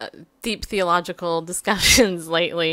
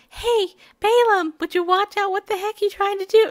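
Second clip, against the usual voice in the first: very high, put-on girly voice; 14 semitones higher than usual. Telling the story of Balaam, she voices the talking donkey: girl's voice for the donkey. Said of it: "Why am I doing a girl's voice like that?".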